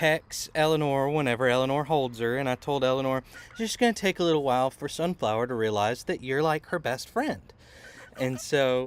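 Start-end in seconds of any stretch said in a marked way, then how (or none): none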